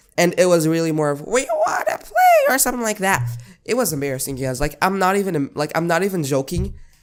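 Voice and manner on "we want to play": very high, squeaky voice mixed with fear. Retelling an embarrassing moment when the ball came: imitating own squeaky, fearful voice. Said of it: "it got even more squeaky because it was mixed with fear".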